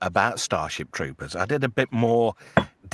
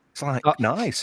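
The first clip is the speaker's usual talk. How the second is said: usual speaking voice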